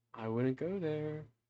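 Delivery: soft, hushed half-whisper. As the listener approaches a crypt, the narrator voices a half-whispered warning. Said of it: "you hear a voice whisper to you".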